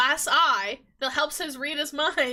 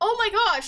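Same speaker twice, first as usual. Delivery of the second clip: acted-out, frantic, alarmed, panicked freaking-out outburst; 6 semitones higher than usual. Retelling a book scene where a character panics: imitating a character freaking out. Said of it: "He starts freaking out and trying to heal her".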